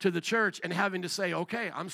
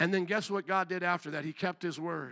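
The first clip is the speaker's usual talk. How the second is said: ordinary delivery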